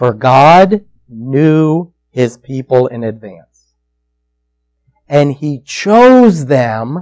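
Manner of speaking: slow, low, deliberate word-by-word reading. Speaker rereads a passage so it sinks in: slowed-down reading. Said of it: "I'm going to make myself slow down".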